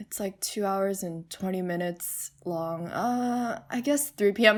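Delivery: put-on muttering under breath. Retelling how a man answered when asked about the musical, imitating someone muttering under breath. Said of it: "He's kind of muttering under his breath like".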